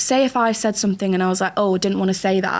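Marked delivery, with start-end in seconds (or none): none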